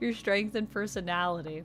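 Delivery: normal talking voice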